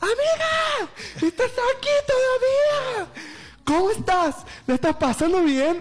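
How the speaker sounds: put-on very high, gushing, excited shout. Retelling a friend spotting her at the club at 5:30: retelling a friend's shouting. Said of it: "empezó a gritar".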